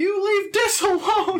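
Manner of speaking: shouting. In a role-play fight, a character runs in to defend another, shouting. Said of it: "Nim just shouts".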